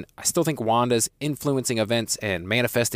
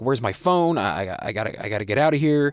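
put-on panicked pleading voice. Recapping a scene, acting out a disoriented man pleading with his rescuer: panicked pleading. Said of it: "he pleads with Vision".

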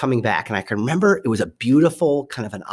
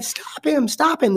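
very high-pitched squealing cry. Retelling a voice heard yelling out; high-pitched squealing voice. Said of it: "This high-pitched voice is kind of squealing".

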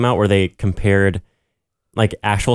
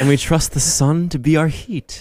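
higher, mock-mythical, ancient-prophecy-style intoning. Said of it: "'Cause it kinda sounds, like, mythical".

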